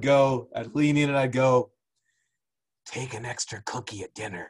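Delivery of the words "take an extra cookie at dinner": leaning-in whisper, very quiet and low. Recounting leaning in to tell them something: retelling a whisper. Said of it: "And I would whisper".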